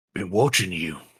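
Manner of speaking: rough, gruff-sounding voice. In a role-play, a stranger with a dagger at the listener's side speaks: gruff voice. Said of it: "and a gruff voice say".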